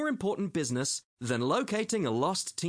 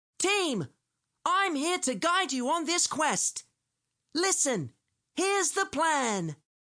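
tiny, very high, squeaky mouse voice; 11 semitones higher than usual. Narrator reading a story, Master Mouse addressing his team, in a squeaky Master Mouse voice. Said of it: "cleared his throat and squeaked".

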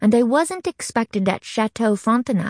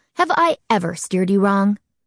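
plain

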